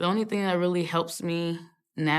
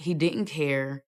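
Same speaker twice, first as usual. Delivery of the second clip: normal talking voice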